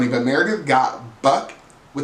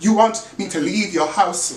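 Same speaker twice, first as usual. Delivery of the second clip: random high, fake British accent; 6 semitones higher than usual. Speaker quotes Meredith's reply to being kicked out, in Meredith's fake British accent. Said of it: "Meredith has a random British accent".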